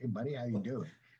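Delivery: casual, offhand street-dude delivery. Repeating a greeting the other speaker just retold: Matthew McConaughey voice. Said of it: "I just pictured that in his voice".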